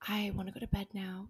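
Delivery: whispered voice. Retelling quietly asking a partner about going to bed: imitating own whisper. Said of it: "whispered to Damie".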